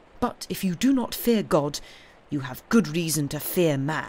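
plain reading voice

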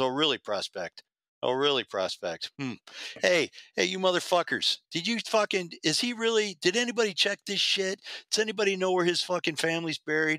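suspicious, probing tone. Retelling how a club member at the clubhouse questioned him: imitating a suspicious club member. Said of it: "He goes".

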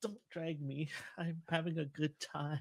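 barely audible, very soft, dazed out-of-it voice. Friends recalling a friend who was messed up, imitating a messed-up friend. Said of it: "that was a good impression".

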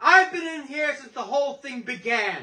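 sneering, contemptuous, scornful, mocking tone. The Devil, posing as a charming lawyer, speaks scornful and mocking.

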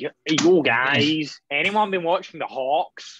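put-on American accent with Scottish accent slipping through. Doing a bit in a borrowed hoodie and hat: put-on american accent. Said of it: "Preston's American accent is just more Scottish".

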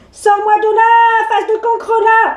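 bellowing, high, shrill witch's roar. Narrator voices the witch spat into the soup tureen, roaring. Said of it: "rugit Cornebidouille".

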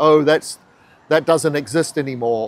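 ordinary talk

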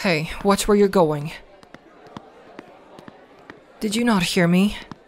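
threatening, intimidating, taunting bully tone. Confronting someone who bumped into them: bully. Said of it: "I'm the only real bully here".

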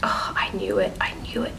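soft, unvoiced, excited whisper to oneself.

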